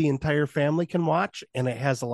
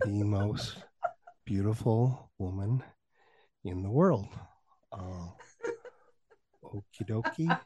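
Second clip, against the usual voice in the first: pitch dropped low, fumbling delivery; 6 semitones lower, 8 dB quieter than usual. Imitating Joe Pera knocking on Angie's door: Joe Pera impression. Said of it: "It'd probably be more like".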